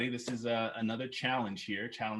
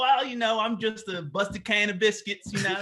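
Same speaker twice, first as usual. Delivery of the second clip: very high, loud put-on Kentucky country accent; 10 semitones higher, 6 dB louder than usual. Asked to do a sentence of a quote with the accent, a put-on country Kentucky accent. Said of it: "can we hear like maybe a sentence of this quote with the accent".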